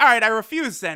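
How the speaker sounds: ordinary talk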